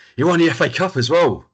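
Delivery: fed-up shout. Retelling yelling back at a TV commentator, retelling an exasperated shout. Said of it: "I'm shouting at the screen".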